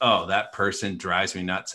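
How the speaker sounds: normal talking voice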